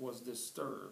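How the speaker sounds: ordinary delivery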